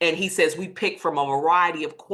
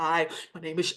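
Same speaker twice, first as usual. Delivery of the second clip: put-on shaky voice, quieter; 5 dB quieter than usual. Retelling a panicked phone call in the middle of an exam, imitating own shaking voice. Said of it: "my voice shaking".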